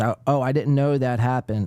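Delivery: ordinary talk, nothing marked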